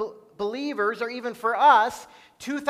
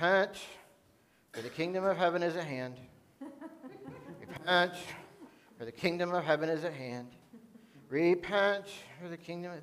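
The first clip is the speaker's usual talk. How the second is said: acted reluctant, joyless, downhearted, flat preachy tone; 6 semitones lower, 11 dB quieter than usual. Imagining how Jonah preached in Nineveh: mock-downhearted Jonah voice. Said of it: "he was just downhearted. ... This is how Jonah would have talked".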